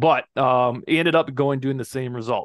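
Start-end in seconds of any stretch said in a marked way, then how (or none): none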